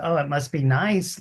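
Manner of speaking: plain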